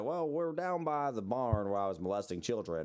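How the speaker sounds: put-on drawled Southern accent. Imitating a friend's Southern drawl from earlier: imitating Matt's Southern drawl. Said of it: "doing your Southern drawl thing".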